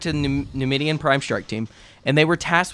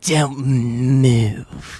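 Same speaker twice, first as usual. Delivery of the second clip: woman's voice holding the word "move" long and stretched. Retelling a Star Wars story, voicing a bounty hunter: voicing Shenda Mol. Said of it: "we doing this voice too?".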